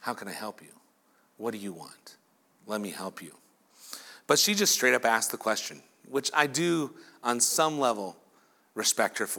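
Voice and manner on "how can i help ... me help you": put-on gentle, loving tone, very soft, low, hushed. Retelling a story, the speaker imagines how a man offered help: imitating a loving, kind voice. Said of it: "in a very loving and kind voice of".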